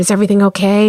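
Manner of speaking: whispered voice. Retelling checking on a workshop participant who wasn't writing: retelling a whisper. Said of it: "and whispered".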